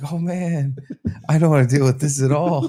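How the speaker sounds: mock laid-back, stoned, checked-out tone. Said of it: "I did just smoke, so I was just like".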